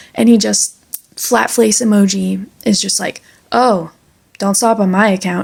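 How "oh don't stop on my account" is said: normal talking voice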